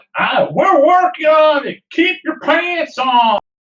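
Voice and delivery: high, loud shout delivered very slowly. Answering a screaming crewmate from the boat's deck: yelling back. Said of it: "I yell back real quick".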